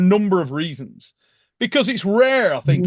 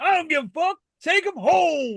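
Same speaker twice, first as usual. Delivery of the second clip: very high, shouted delivery with cursing; 11 semitones higher than usual. Retelling Travis shouting back during the match: imitating Travis shouting. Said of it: "Travis shouting".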